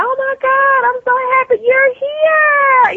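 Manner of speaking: put-on very high, bright, bubbly girly chirp and gush. Describing the tv persona that didn't match who she is, mock-bubbly girly voice. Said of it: "the little bubbly".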